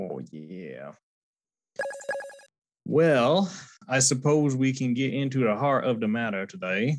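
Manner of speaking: spoken with a Southern accent. Opening the conversation in a put-on voice, Forrest Gump voice. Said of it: "why are you talking like Forrest Gump".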